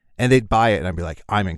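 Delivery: ordinary talk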